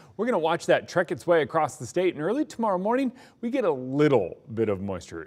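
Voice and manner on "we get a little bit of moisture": emphatic stress on the word little. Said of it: "Emphasis on little".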